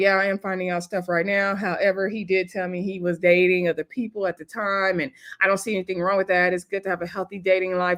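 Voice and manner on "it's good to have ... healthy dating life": normal talking voice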